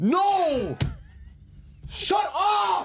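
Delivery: irritated, angry, high-pitched shout, long drawn-out "no". Snapping at the others over a football argument: angry shout. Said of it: "Why are you getting so mad?".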